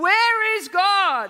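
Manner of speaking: thundering, booming preacher roar, high and very loud. A narrator reads a preacher shaking his finger in a boy's face: bellowed.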